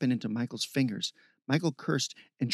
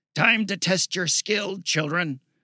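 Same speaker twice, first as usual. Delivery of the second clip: high, full-throated, booming, commanding bellow; 5 semitones higher, 5 dB louder than usual. A rider challenging the others to follow before galloping off, bellowing. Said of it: "she bellowed".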